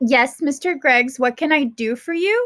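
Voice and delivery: very polite, most courteous tone. Reading a story aloud, a mother greets a man she dislikes: most polite voice. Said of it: "asked Mom in her most polite voice".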